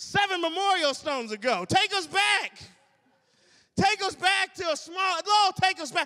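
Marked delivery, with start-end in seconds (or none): 1.7-6.1 mock, high, wailing and complaining plea. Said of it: "They started to cry".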